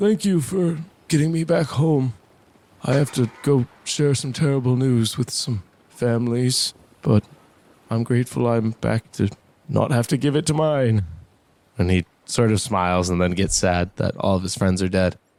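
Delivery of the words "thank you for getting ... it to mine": put-on thankful, grateful elderly old man voice. Voicing the old man as the players let him go home: grateful old man voice. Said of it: "is very grateful. He says".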